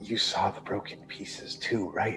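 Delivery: very hushed, very quiet whisper, close to the ear. Voicing a character leaning in close to a player: whispering close. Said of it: "he's whispering close to you".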